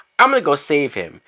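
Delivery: ordinary talk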